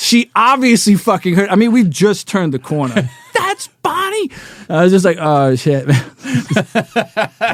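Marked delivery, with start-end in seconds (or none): 3.3-4.3 acted-out shrill, very high, loud shriek. Retelling how he reacted right after they turned the corner, retelling a scream. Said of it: "And he screams it so loud".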